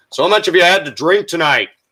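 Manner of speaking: mock loudest talking voice, pitched way up. Retelling the cops questioning people, imitating cop's loud talking. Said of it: "at the loudest fucking voice".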